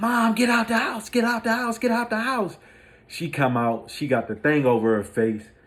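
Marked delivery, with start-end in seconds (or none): 0.0-2.6 acted, shrill, frantic pleading, very high panicked scream. Retelling a house fire, calling mom out: imitating own past scream. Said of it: "I'm screaming".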